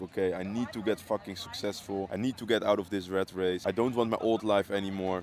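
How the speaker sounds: ordinary delivery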